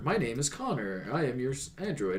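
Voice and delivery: put-on robotic android voice. Describing an actor's android role, imitating him: robotic Connor android voice. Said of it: "so he kind of robotic".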